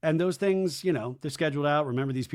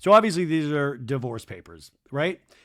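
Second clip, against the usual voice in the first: plain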